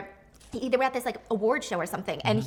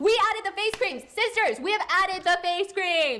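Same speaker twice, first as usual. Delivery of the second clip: put-on high, hyped-up screaming salesman voice; 8 semitones higher than usual. Retelling a lipstick streamer's sales hype: imitating a streamer screaming. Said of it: "Are you screaming for the people downstairs?".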